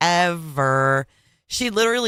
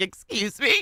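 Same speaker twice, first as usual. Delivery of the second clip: catty tone in a pitched-up voice; 5 semitones higher than usual. Reacting to a clip, voicing a castmate's reply: imitating Lauren. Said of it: "Lauren's like".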